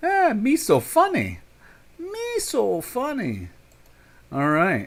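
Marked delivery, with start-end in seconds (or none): 0.0-3.5 silly alien voice, very high, swooping, very slow. After thanking someone for a heart, joking around in a Jar Jar voice. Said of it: "That's my Star Wars voice".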